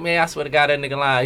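normal talking voice

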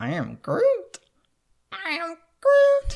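very high, slow, swooping, stretched-out voice. Trying a Groot voice while naming the Guardians: Groot voice. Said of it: "I'm not good at this".

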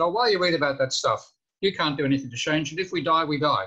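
choppy word-by-word English. Retelling what a woman said on finding the speaker upset, imitating very staccato english. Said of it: "she speaks in a very staccato English".

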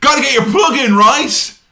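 shrieking, very high-pitched, loud screaming yell. Retelling what a commentator said on air: imitating someone screaming. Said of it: "Cole literally screams".

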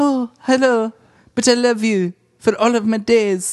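put-on high, boyish voice, like before it broke. Mocking how Mac delivers the bad news, young Mac voice. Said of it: "like Mac before his balls dropped".

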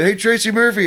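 acted shouting. Retelling calling out to a man while leaving, retelling a yell. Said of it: "I just yelled at him like I was leaving".

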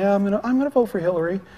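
mock unenthusiastic, put-on unexcited tone. Mimicking how some people say who they'll vote for, imitating someone unexcited. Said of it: "they don't say it like they're excited. They're going".

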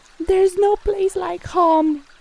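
tiny, high, scared mumble. The turtle answers Zeus's demand, in a tiny, scared mumble. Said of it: "mumbled in a tiny, scared voice".

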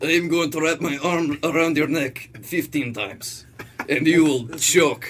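put-on Russian-sounding accent. Voicing a character said to be from Romania, in a Russian-sounding accent. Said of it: "Sounds Russian".

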